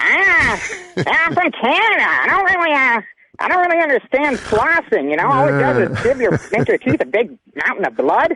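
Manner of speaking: over-the-top grating delivery. Doing the insulting version of the impression after being asked: super annoying Norm impression. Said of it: "super extremely annoying Norm".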